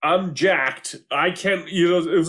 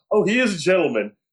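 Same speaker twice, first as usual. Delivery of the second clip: announcer-style TV voiceover narration. Retelling a dating show scene: imitating the show's voiceover guy. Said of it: "the voiceover guy says".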